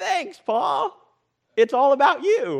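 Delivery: high, loud, shrill, drawn-out mocking sarcastic drawl. Retelling own reaction while reading a Bible passage: acting out a sarcastic inner voice. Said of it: "the sarcastic part of me is actually like".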